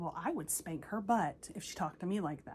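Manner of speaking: ordinary delivery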